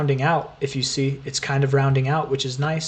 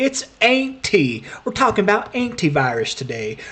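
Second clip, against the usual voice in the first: put-on Texas accent, very high pitch; 6 semitones higher than usual. Joking about how to pronounce a word: put-on texas accent. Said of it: "Maybe I should bring out the Texas accent".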